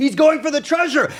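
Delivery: high-pitched shouting. Voicing Duergar watching from above as a hero climbs down: Duergar shouting. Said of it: "They're shouting".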